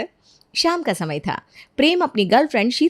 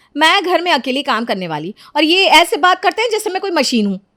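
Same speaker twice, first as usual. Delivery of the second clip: shouty, aggrieved yelling outburst; 4 semitones higher than usual. Complaining about doing all the housework alone: yelling. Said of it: "इतना क्यों चिल्ला रही है?".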